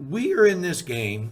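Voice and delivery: voice breaking. Addressing the silver stacking community, speak with a cracking voice. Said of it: "my voice is cracking".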